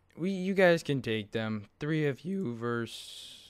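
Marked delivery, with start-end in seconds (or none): 1.8-3.5 voice cracking and breaking on the words. Playing a game, telling teammates they can take the fight, voice crack. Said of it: "that was a voice crack".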